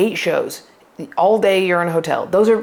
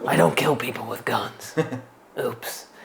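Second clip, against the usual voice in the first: very low, deep put-on superhero voice; 7 semitones lower, 7 dB quieter than usual. Doing a joke impression: Alec Baldwin as Batman voice. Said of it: "this is my impression of if Alec Baldwin were Batman".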